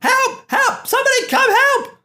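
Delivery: very high, shrill, loud screaming. A game narrator voices a woman wrapped up in a rope, screaming for help. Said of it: "Screaming all the way".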